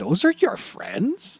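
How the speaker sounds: high, slow, shocked voice.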